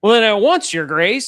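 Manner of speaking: mock, booming, very loud, dripping with sarcasm. Retelling a character's reply to a summons, imitating a sarcastic reply. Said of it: "all sarcastic".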